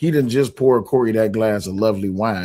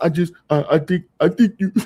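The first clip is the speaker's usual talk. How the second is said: mock crying voice, higher; 8 semitones higher than usual. Mocking a friend's video where he was crying: imitating someone crying. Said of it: "the video where you was crying".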